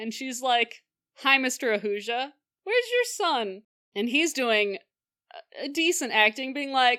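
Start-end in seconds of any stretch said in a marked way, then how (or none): 1.2-3.6 put-on feigned innocent voice, higher pitch. Retelling a TV scene, imitating Tulsi feigning innocence. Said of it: "doing the best acting of her life".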